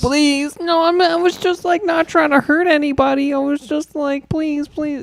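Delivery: very high, earnest, begging plea. Retelling how a man in a video begged: imitating a pleading man. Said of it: "And he was like".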